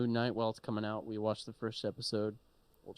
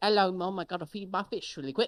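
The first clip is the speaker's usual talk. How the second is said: put-on British accent, higher and louder; 8 semitones higher, 5 dB louder than usual. Imitating Oscar Isaac's character from the show: imitating Oscar Isaac's British accent. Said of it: "When he's just like".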